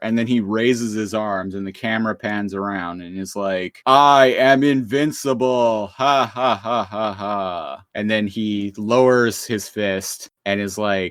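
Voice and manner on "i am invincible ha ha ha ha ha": deeper, loud, slow, menacing gloating villain voice. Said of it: "his voice gets a lot deeper and more menacing".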